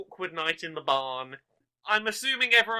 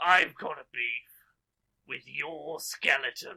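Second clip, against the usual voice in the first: deep, low monster voice; 5 semitones lower, 5 dB quieter than usual. Narrating a game, the Minotaur confronts the necromancer: Minotaur voice. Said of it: "the Minotaur ... looks straight at the necromancer and goes".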